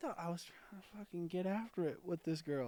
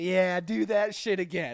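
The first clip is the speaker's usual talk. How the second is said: very loud, booming, taunting trash talk; 2 semitones higher, 9 dB louder than usual. Retelling a fight after a friend got pushed: imitating own taunting trash talk. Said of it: "I was in that shit-talking mood".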